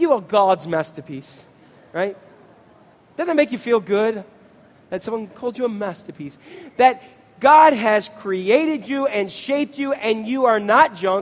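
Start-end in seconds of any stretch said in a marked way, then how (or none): 0.0-1.4 low-pitched put-on English accent. Telling the audience to say it to the person next to them, English accent. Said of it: "in your best English accent".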